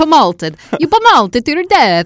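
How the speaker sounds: terrible fake Italian accent, very high and loud. Repeating the word 'pummeled' to the other speaker, in a terrible Italian accent. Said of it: "Just the terrible Italian accent".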